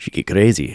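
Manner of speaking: vaguely Russian-sounding put-on accent. Describing a character, slipping into a vaguely russian accent. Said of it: "It kind of sounded Russian".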